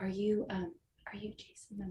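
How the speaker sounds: very quiet speech. Retelling tapping someone and asking who he is, re-enacting speaking very quietly. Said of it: "I tried to talk to him very quietly".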